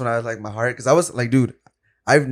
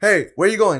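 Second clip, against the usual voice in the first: play-acted, high-pitched yell; 8 semitones higher, 4 dB louder than usual. Retelling a beer theft, imitating the cashier: imitating a cashier screaming. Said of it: "screaming at me".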